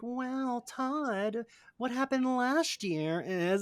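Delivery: soft, high, mean, snide put-on voice. Describing to friends the voice Margot puts on, Margot's mean put-on voice. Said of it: "the like voice she puts on".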